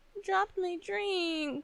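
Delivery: very slow, pitiful, pathetic crying whine. Retelling freaking out after dropping a drink: imitating own pathetic voice. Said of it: "in this pathetic voice".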